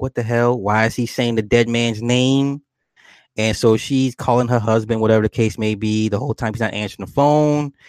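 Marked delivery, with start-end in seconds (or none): none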